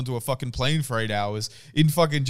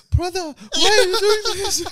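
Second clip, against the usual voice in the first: put-on very high, loud teenage girl voice; 6 dB louder than usual. Imagining a dubbed actress's line, sounding like a 14-year-old girl. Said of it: "Sound like a 14-year-old girl and say".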